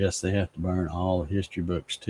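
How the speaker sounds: ordinary talk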